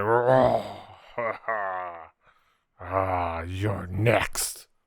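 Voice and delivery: very slow, drawn-out, wounded taunting tone. Voicing a wounded enemy who taunts a player: hurt enemy taunting. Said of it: "he's looking hurt. He's like".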